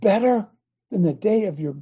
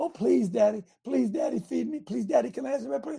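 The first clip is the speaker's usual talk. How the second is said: mock childish begging, pretend and quieter; 3 semitones higher, 6 dB quieter than usual. Acting out a child begging a parent for bread: mock begging like a child. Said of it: "do you make your children beg".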